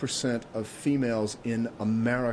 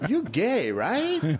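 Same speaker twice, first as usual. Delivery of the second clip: high, very bad, put-on Chinese accent; 8 semitones higher, 3 dB louder than usual. Retelling what a woman at a Chinese restaurant asked the speaker, in a bad Chinese accent. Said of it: "I'm doing my worst Chinese accent".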